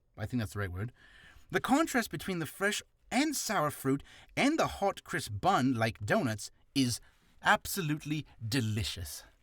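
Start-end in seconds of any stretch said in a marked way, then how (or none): 1.6-9.3 put-on English accent. Reading a passage aloud, in a put-on English accent. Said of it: "Why did I read that in an English accent?".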